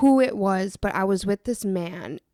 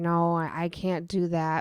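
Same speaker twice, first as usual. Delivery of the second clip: slow, begging, pleading delivery; 3 semitones lower, 4 dB quieter than usual. Retelling being told to eat the hamster, retelling your begging. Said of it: "I remember begging and pleading like".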